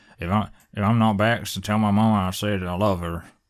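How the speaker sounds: slow, gruff, gritty Southern drawl. Describing when a Southern accent sounds cool: Llewellyn's gruff Southern accent. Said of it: "It's kinda like a gruffness to it".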